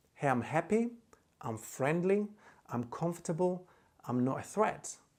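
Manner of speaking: usual speaking voice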